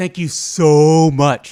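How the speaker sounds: put-on high girly tone, very loud and very slow. Retelling how a girl thanked someone: imitating the girl's tone. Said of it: "in that tone".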